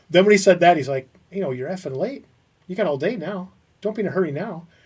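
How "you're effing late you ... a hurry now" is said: put-on quiet, contained, simmering anger. Retelling the boss's reply to a late arrival: imitating someone angry but not yelling. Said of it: "he is pissed, and he's just not yelling".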